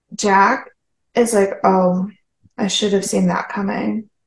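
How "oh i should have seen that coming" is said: acted flat, emotionless deadpan monotone. Recapping an episode where guards knock Jack over, quoting Jack with no emotion. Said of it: "with no emotion".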